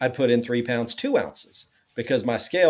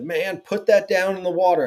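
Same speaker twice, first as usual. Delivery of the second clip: imitated near-yell, pitched higher; 7 semitones higher than usual. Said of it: "yelling at me almost".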